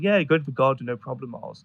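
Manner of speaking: usual speaking voice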